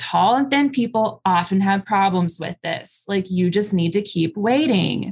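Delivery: ordinary talk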